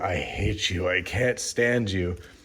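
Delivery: low, quiet whisper. Retelling an actor's story about a restaurant encounter: imitating someone whispering. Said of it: "he whispers in Jim Carrey's ear".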